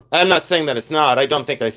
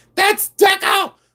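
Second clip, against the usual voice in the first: mock shrill, very high screaming exclamation; 3 dB louder than usual. Describing how people react to a piece, the speaker retells them screaming. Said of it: "They start screaming".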